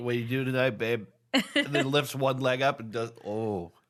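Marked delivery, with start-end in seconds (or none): 0.0-1.1 put-on lizard bro voice, much faster. Joking about lizards doing push-ups, the speaker voices a lizard bro. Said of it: "Little lizard bros".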